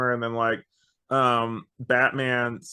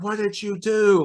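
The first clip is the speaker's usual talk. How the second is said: mock very high, stretched-out, drawn-out scream; 10 semitones higher, 4 dB louder than usual. Retelling a trailer moment where she screams: imitating a scream. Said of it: "she's screaming".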